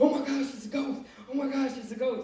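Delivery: play-acted terrified, spooked, high-pitched cry. Retelling how the disciples saw a figure on the water: imitating scared disciples. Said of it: "scared out their mind".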